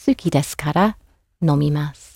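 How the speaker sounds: brief breath break following "kara". Japanese lesson on pausing for breath, with a pause after kara. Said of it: "say the kara and then pause".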